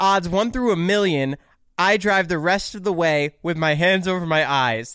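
ordinary talk

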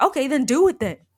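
loud, high-pitched, angry, furious outburst. Retelling a scene from a show, quoting the dad: imitating a furious dad. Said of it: "the dad gets so mad that he's like".

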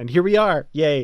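loud, giddy, bubbling-over excitement. Introducing the author of a Benjamin Sisko autobiography, giddy. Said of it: "you can hear the giddiness in my voice".

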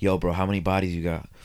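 mimicked low whisper. Retelling a man whispering in their ear at the bench, imitating a low whisper. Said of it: "He's trying to keep quiet, like, a low voice".

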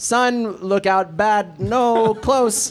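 high, poorly speaking, broken robot voice. Retelling a scene, the speaker voices an update from a robot: poorly speaking robot voice. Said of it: "that poorly speaking robot".

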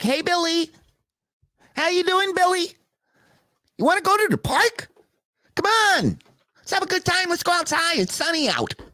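very high, natural everyday voice. Imitating how a man the speaker calls fake really talks: imitating how someone really talks. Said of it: "That's how he talks for real".

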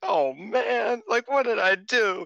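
tearful crying, very high-pitched. Retelling a ring announcement, the speaker acts out Saya's reaction: imitating Saya crying. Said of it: "and Saya's just crying".

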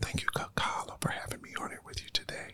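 soft, fast mock ASMR whisper close to the mic.

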